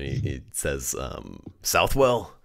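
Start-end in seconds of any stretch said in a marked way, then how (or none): 1.6-2.2 sudden high, loud surprised perk-up. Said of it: "he kinda, like, perks up for a moment".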